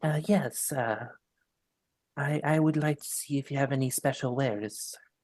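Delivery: gruff, rough, purring feminine voice. Playing a tabaxi going up to the shopkeep, in a gruff, feminine, purring voice. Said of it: "a gruff, feminine, um, like purring ish".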